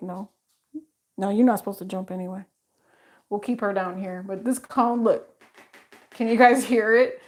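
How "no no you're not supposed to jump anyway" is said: put-on dog voice, lower and quieter. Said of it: "She's like".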